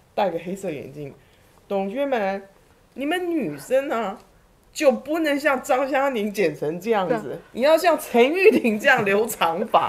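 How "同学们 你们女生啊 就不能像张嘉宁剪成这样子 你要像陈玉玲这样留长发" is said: speaking Sichuan dialect. Retelling how an old class teacher spoke to the class: Sichuan accent. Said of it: "他就用他的四川话".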